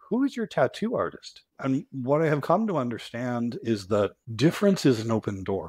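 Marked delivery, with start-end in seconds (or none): 0.1-1.4 mock very high, bright, sprightly cheerful voice. Retelling what a woman who walked over said, imitating a sprightly cheerful voice. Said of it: "in a sprightly and cheerful voice said".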